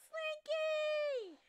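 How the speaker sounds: very high, stretched-out, drawn-out yell. Narrating a scene as game master, a voice yells: yelling as Tiny. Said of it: "You hear a voice yell".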